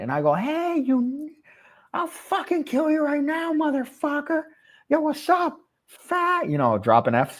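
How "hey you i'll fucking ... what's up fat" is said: mock very high, wasted, drugged-out rambling rant. Retelling threatening a friend in hospital, imitating himself high on ketamine. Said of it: "I'm fucked up on ketamine".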